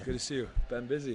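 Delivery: short of breath, puffing, winded. A guest greeting the host on arrival, out of breath. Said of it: "you you sound winded".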